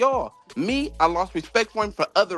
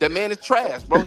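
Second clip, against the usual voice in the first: ordinary delivery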